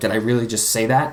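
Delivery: ordinary talk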